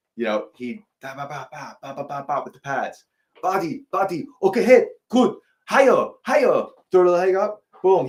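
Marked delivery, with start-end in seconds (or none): 3.5-8.1 put-on loud, pitched-up Thai accent, calling out. Acting out a trainer coaching during pad work, doing an impression of his accent, imitating a thai accent. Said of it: "the Thai accent".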